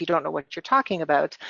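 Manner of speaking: ordinary talk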